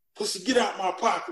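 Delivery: mock abrupt blurted outburst. Retelling an outburst in a team meeting: imitating Gene yelling. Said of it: "Gene just yells out".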